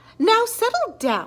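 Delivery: sugary-sweet, high tone. Miss Nelson tells her misbehaving class to settle down, in a sweet voice. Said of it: "said Miss Nelson in a sweet voice".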